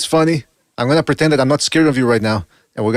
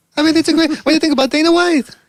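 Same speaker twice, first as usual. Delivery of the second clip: very high voice leaping up an octave at sentence ends; 13 semitones higher than usual. Mimicking a man asking Shakur questions about a fight; voice jumps up an octave. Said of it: "the voice goes l- up an octave every time he he finishes his sentence".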